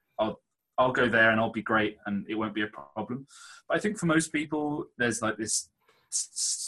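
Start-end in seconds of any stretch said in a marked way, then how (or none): none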